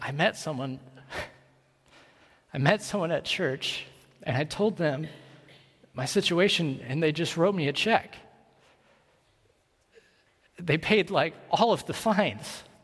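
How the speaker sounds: acted quavering, unsteady, shaking, trembling voice. Retelling what he told the speaker; imitating his shaking voice. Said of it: "And his voice is shaking".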